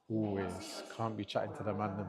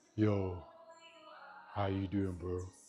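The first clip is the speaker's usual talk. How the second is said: put-on deep late-night voice, much slower. Mimicking someone calling you late at night, in a put-on deep voice. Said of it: "With your deep voice and that".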